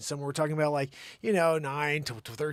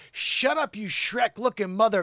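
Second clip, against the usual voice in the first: put-on girlish yell, pitched higher and louder; 5 semitones higher, 5 dB louder than usual. Reading an overheard line where a girl yells at her boyfriend: imitating a girl yelling. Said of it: "She's yelling at her six-foot-five boyfriend".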